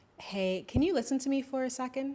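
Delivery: open, courteous inviting tone. Showing a respectful way to ask someone to listen, soft inviting tone. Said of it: "that tone sounds a bit more inviting and more respectful and not as harsh".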